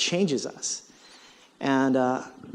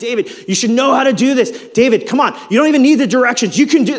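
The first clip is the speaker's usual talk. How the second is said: very high, very loud, edgy and frustrated voice; 10 semitones higher, 12 dB louder than usual. Parent retells how they spoke to their son David; retelling an edgy tone. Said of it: "there's like an edge to my tone".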